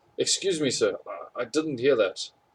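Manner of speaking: ordinary talk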